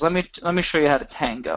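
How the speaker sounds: normal talking voice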